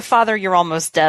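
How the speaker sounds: normal talking voice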